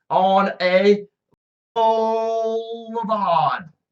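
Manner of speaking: put-on slow Australian accent. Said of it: "An Australian".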